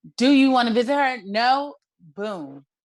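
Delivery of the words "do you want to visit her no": loud, fast, harsh voice. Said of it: "snatched the phone out of Julie's hand and said".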